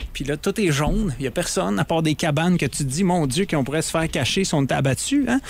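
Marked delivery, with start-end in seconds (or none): none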